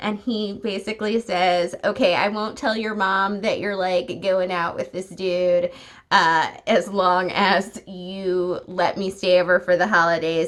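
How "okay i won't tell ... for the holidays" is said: ordinary delivery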